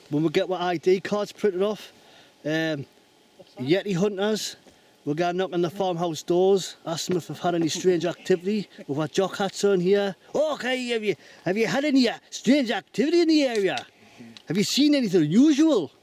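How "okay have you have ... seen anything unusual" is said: bad fake Scottish accent, high-pitched. Yeti hunter asking at a farmhouse door about strange activity, bad Scottish accent. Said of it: "My Scottish impression isn't very good".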